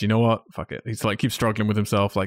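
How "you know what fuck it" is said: plain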